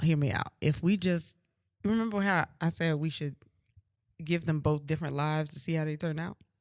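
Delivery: secretive, soft, hushed half-whisper. Floating an idea about their twin kids to the other parent, half-whispering. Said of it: "Why are you whispering?".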